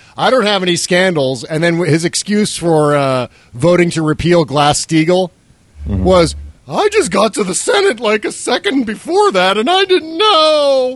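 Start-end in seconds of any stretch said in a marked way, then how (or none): 6.7-11.0 very high toy-like voice, stretched know. Speaker quoting Lincoln Chafee's excuse: Charlie in the Box voice. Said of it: "I'm also doing the Charlie in the Box voice for Lincoln Chafee".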